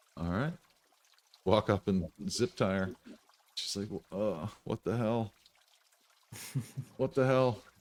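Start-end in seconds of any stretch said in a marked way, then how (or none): 4.1-7.6 dazed, bewildered, confused, out-of-it delivery. Voicing a woman as someone zip-ties her, in a daze. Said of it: "she's like in a daze".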